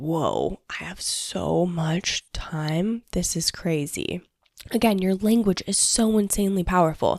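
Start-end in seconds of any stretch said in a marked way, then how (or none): 0.0-4.2 slow, amazed whisper. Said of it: "And I'm like".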